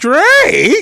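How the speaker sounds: very high, loud cartoon roach shriek. Retelling how someone got riled up and said a name, Raid commercial roach voice. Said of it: "Like the roaches on the Raid commercials".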